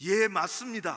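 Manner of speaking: put-on very loud, brusque, blunt, curt, put-out voice. Retelling the gentleman's answer about the seat: imitating a very curt, uncomfortable answer. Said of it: "아주 퉁명스럽게 불편하게 대답을 하더라고요".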